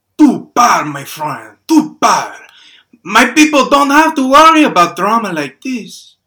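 put-on odd, hard-to-place European accent. A man in line turns around to a frustrated stranger: strange European accent. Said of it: "He speaks with a strange European accent".

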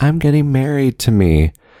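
loud, high-pitched yelling. Retelling a woman at a bar who leaned in: retelling a yell. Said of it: "and yells".

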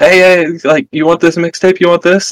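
high, pushy street seller voice. Describing a packed town to the players: street hawker on the Las Vegas Strip. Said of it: "how people are in the Strip".

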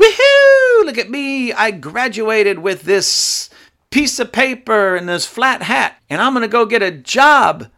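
put-on high, whooping cheering yell. Imitating new graduates at their graduation: imitating graduates yelling. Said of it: "they're yelling".

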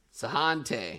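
mock French pronunciation. Told to now say the word with the accent, in a French accent. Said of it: "now do it with the accent".

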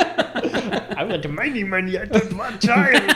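high, slow monster voice.

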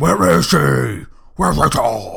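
very loud, rough put-on voice, shouted.

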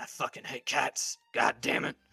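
irate werewolf character voice. Voicing a werewolf being threatened with a cat, angry werewolf voice. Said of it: "He's mad when you're doing".

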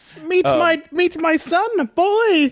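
put-on kid character voice. On the program, a co-host jokingly voices a line in a Muppet Christmas Carol son voice. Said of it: "you're doing his voice like the middle son in Muppet Christmas Carol".

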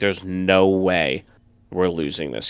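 ordinary talk

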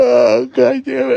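yawned out, pitch way up, very high. Wrapping up a tired talk to listeners, the speaker breaks off: yawning. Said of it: "I'm yawning too much".

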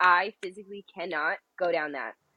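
ordinary talk, nothing marked

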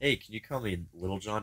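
secretive, hushed stage whisper. Retelling a request someone half-whispered during a movie: imitating a half-whisper. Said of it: "'cause you just whispered".

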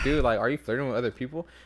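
ordinary delivery

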